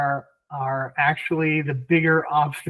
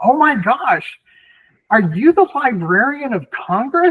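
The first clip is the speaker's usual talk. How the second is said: high, drawn-out, loud shout; 8 semitones higher, 4 dB louder than usual. Retelling a man outside a bar reading a name tag: imitating someone shouting. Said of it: "he just shouts out".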